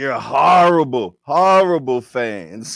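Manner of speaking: very loud, belted-out put-on voice. Mocking boxing fans for turning on a fighter who lost: Canelo voice. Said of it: "In my Canelo voice".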